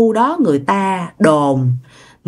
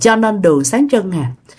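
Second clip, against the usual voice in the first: ordinary delivery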